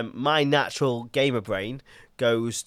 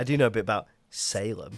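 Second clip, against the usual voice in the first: smug, self-satisfied know-it-all delivery. Retelling another speaker's earlier line: imitating a smug friend. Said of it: "he was so smug when he was like".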